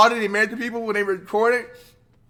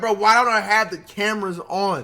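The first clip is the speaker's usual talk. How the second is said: usual speaking voice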